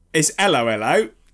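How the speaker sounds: London Cockney accent. Correcting the other speaker's pronunciation, the speaker says the phrase in a cockney accent. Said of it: "It's like a Cockney like hello hello".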